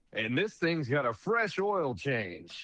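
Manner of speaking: racetrack horse race announcer delivery. Retelling an auction where the famous horse announcer spoke: imitating Kurt Becker the horse announcer. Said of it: "he's famous announcer for horses".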